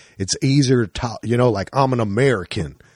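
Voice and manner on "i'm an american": mock, exaggerated Texas drawl. Showing how British people do an American accent: imitating a Brit doing a Texas drawl. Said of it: "a Southern or, like, a Texas drawl".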